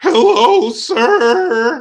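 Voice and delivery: put-on very high, loud, squeaky, cracking teenage boy voice. Imitating a pimple-faced boy greeting the father: imitating a cracking teen voice. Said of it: "voice cracking".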